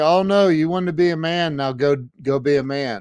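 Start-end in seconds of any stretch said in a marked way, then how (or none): none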